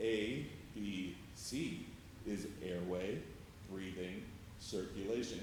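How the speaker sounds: very slow, deliberate, carefully spaced words. Demonstrating slow speaking for people's comprehension: very slow speech. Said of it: "you're talking like this".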